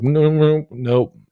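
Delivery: loud, flat, high-pitched voice. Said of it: "they're just like".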